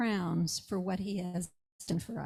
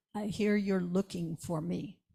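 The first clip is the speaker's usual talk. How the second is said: imitated Czech accent. Retelling a phone call from a man: imitating a czech accent. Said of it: "he has this Czech accent".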